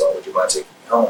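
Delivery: ordinary talk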